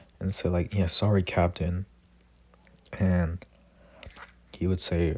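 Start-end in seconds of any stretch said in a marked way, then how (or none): none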